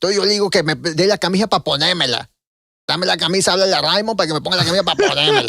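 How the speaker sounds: squeezed-throat, strained voice in Spanish. Imitating an actor speaking Spanish: imitating a constricted-throat voice. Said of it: "he's constricting the throat".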